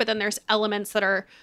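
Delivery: ordinary delivery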